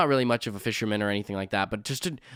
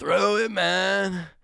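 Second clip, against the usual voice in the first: rough, high, creaky put-on stoner voice; 9 semitones higher than usual. Retelling what the driver said as they got pulled over, in a stoner voice. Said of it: "that's like my stoner voice".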